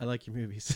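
bashful, self-conscious, awkward delivery, acted out. Retelling a friend meeting a porn model: imitating Dan being shy. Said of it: "all shy".

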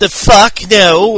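put-on British accent. Retelling a wrestling contract signing, imitating Neville's accent. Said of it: "or whatever his language voice is".

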